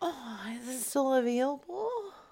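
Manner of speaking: eager, delighted, thrilled, slow. Asking a seller on the phone about a cradle: excited. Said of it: "She didn't like your excitement".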